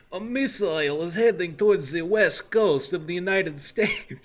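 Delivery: put-on loud, heavy Russian accent laid on thick. Quoting an old Soviet guy who set them trajectory problems: thick Russian accent. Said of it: "really thick Russian Russian accent".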